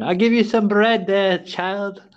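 put-on old man voice.

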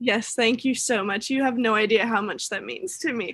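tearful, crying while talking. Thanking another speaker for a surprise: crying while talking. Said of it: "I'm sitting here crying".

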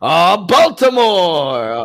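high, very slow, loud, drawn-out calling voice. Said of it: "Red Dog, like, every city we're in".

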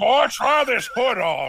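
very slow, drawn-out, high voice, pitch swooping. Answering the other speaker's joke in kind: Foghorn Leghorn voice. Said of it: "the Foghorn Leghorn in the room".

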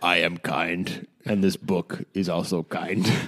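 very deep put-on character voice, lowest register. Asked to tell them about the book, speaking in a Xerxes voice. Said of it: "My Xerxes voice".

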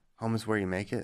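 ordinary delivery

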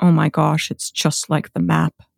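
put-on thick Massachusetts accent. Retelling a crewmate seeing Massachusetts from space: imitating a crewmate's thick Massachusetts accent. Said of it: "he has a really thick Massachusetts accent".

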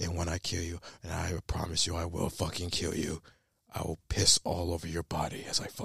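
very quiet, hushed dark superhero vigilante voice. Imagining an actor still in character after the role, in Batman voice. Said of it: "Ben Affleck just turned into Batman".

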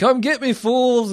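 shrill, very high, shouted screaming. Retelling a character running with a giant gun: imitating a character screaming. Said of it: "screaming and shouting".

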